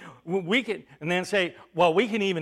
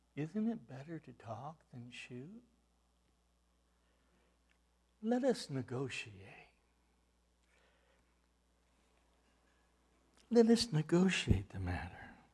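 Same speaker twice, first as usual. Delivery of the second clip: gentle, soft, calming, soothing voice; 5 semitones lower, 13 dB quieter than usual. Narrating a story, voicing the bear speaking to a hunter in a soft, soothing voice. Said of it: "the bear spoke in a soft, soothing voice".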